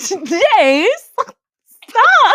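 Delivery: high, loud, swooning lovestruck squeal. Doing the requested bit: girl with a crush on Jace. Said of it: "the girl who has a crush on a guy named Jace".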